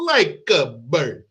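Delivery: badly done, fake, put-on Italian accent. Retelling a story about a mobster and a man who ran off, bad italian accent. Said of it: "any chance I get to do that Italian accent".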